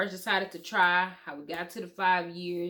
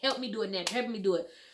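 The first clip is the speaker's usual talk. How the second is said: put-on tearful, crying pleading; 3 semitones higher than usual. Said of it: "I would stay up and cry, like".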